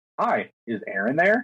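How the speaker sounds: automated, robotic recorded-message voice. Explaining robocalls, acting out the caller's opening line, imitating a robocall robot. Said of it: "when you answer a robocall, there's that pause, and they're like".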